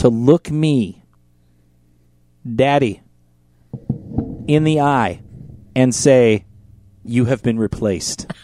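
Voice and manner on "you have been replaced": put-on blunt, direct, odd, matter-of-fact delivery. Retelling what a partner said in an odd, matter-of-fact voice. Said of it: "In a very odd voice that I have never heard her use".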